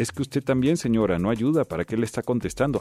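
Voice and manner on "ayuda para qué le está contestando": normal talking voice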